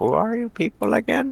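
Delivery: tiny, hushed half-whisper pitched very high. Voicing a small character who peeks through the door at the players, half-whispering. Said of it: "and whispers just like".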